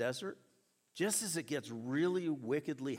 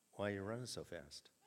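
very calm, low and soft voice; 6 semitones lower, 8 dB quieter than usual. Retelling what he asked while they were running, imitating a very calm voice. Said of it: "in a very calm voice".

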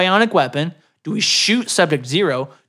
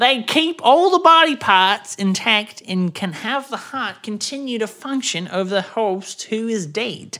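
odd put-on British accent, pitched up; 6 semitones higher than usual. Voicing a scientist explaining the reanimators: weird British accent. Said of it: "the scientist all of a sudden got a weird British accent".

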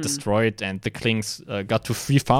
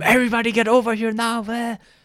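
mock shrill scream, pitched way up; 11 semitones higher than usual. A team captain retells what he yelled at his team, retelling a scream. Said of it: "I like started screaming at my team".

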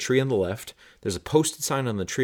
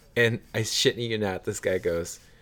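usual speaking voice

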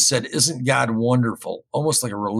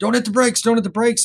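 very high-pitched, urgent screaming; 10 semitones higher than usual. Retelling a van spinning on ice as a sleeping passenger wakes, imitating someone screaming. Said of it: "but she woke up screaming".

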